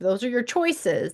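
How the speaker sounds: ordinary delivery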